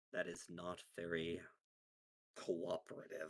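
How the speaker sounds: disappointed, let-down voice. A narrator voices Nomad looking at her, in a disappointed voice. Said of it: "in a disappointed voice says".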